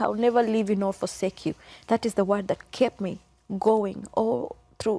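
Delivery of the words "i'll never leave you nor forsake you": ordinary delivery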